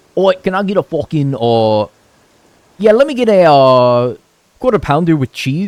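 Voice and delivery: loud put-on Scottish accent. Acting out a customer ordering from a worker on his first day, in a Scottish accent. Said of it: "Scottish accent aside".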